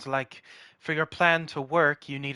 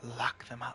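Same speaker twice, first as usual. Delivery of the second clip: quiet, low whispering. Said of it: "I'm just kinda gonna whisper".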